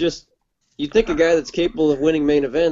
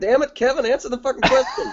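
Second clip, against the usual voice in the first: mock, shocked, high, swooping yell; 10 semitones higher than usual. Retelling reacting to an interviewee dodging a question: retelling yelling at the tv. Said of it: "I was yelling at my T V going".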